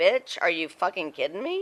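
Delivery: ordinary talk, nothing marked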